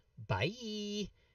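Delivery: high, drawn-out cartoon rabbit voice, pitched way up. Voicing a fleeing character who waves goodbye: Bugs Bunny voice. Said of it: "does a very Bugs Bunny impression and says".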